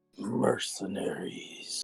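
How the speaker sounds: whisper under breath. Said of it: "I just kind of whisper under my be- breath".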